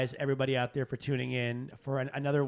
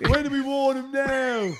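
put-on British accent, higher and louder; 12 semitones higher, 8 dB louder than usual. Mimicking the accent another speaker used telling a story: imitating Renee's British accent. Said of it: "Sound like you're from Australia".

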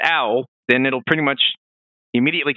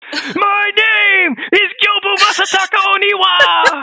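loud, high, drawn-out bad dub voice; 6 dB louder than usual. Mocking the bad English voice acting of a game line: imitating bad Gyobu voice acting. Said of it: "the English voice acting is so bad".

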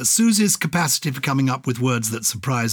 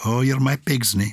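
funny, put-on Scottish accent. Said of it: "I'm putting on a funny accent for it".

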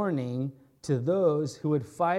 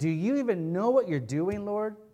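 confrontational, challenging, defiant tone; 5 semitones higher than usual. Acting out a challenger questioning God: imitating a defiant challenge. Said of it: "That's the kind of challenge".

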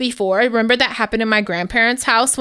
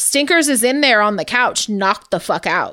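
normal talking voice

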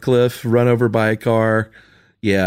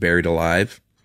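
plain

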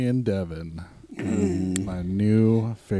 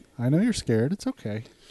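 mock coolly calm, even-toned, needling; 4 semitones higher than usual. Retelling how to taunt a riled-up rival: imitating a calm taunt. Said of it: "then you just calmly say".

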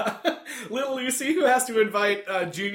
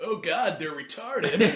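put-on dumb kid's voice. Retelling what a kid said in a room full of clowns, imitating his dumb voice. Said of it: "the kid in his dumb voice".

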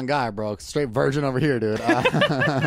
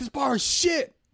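high-pitched yell, pitched way up; 12 semitones higher than usual. Describing the host of Bar Rescue storming into bars: imitating John Taffer yelling. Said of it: "the guy that runs into the bars and he yells".

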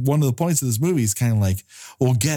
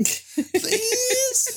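mock pleading like a child, higher pitch; 3 dB quieter than usual. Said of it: "Like he's begging his mom to go hit up the drive-thru".

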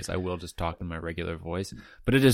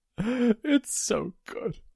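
mock very high sob, full-mouthed, through food. Retelling a comedy sketch character eating and weeping, mock weeping with mouth full. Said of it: "with a mouthful of food, starts weeping".

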